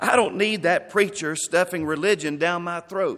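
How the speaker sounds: ordinary delivery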